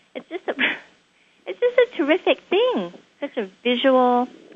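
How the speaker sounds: excited, high-pitched voice with laughter.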